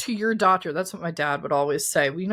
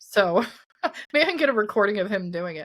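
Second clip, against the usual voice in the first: plain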